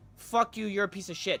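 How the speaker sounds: put-on curt snapping. Showing chat how to talk to a coworker: mock rude snapping. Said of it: "I could be like".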